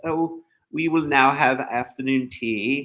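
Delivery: horrible English accent, drawn out and drawled. Explaining the majestic plural, the speaker voices the Queen's line in a horrible English accent. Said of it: "That's a horrible English accent".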